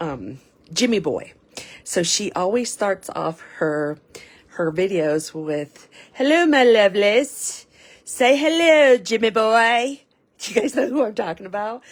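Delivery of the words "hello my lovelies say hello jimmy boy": put-on slow, drawn-out, raised Irish accent. Quoting how a video creator always starts her videos: imitating her accent. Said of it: "listen to her accent all the time".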